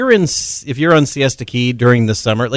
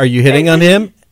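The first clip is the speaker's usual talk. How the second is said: ordinary delivery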